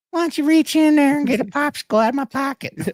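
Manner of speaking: put-on very high, creepy old geezer voice. Acting out a creepy man he is describing, in a creepy old man voice. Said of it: "He was creepy".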